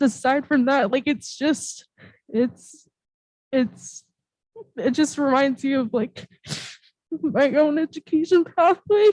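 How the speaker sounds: crying while talking. Speaking at a board meeting about students' pathways, crying while talking. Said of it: "I don't mean to cry".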